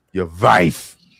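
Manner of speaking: very loud, contemptuous, spat out, acted. Retelling what a woman said, imitating someone saying it like a cuss word. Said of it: "like it was a cuss word".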